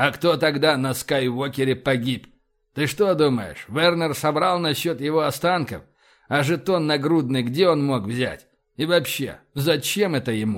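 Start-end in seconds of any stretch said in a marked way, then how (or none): none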